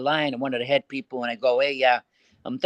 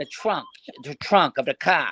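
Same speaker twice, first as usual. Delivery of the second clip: put-on Boston accent with swooping pitch. Speaker retelling a phone call, repeating his own question in a Boston accent. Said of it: "put that Boston accent in".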